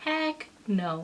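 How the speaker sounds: normal talking voice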